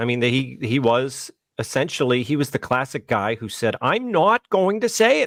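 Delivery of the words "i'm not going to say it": very high, squeaky teacher voice. Retelling how a teacher refused to use pronouns: impression of the fired teacher. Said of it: "It's a pretty good impression".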